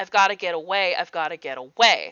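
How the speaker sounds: mumbling under breath. Narrating a scene, voicing a man muttering under his breath. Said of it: "you hear him muttering under his breath".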